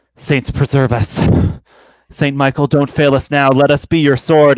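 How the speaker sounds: muttered quietly under the breath. Praying in character while touching an ally's axe: muttered under his breath. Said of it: "under my breath".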